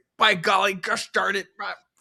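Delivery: high, loud hollering yell. Retelling a quarterback at the line of scrimmage: imitating Philip Rivers yelling. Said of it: "He's just yelling at his teammates".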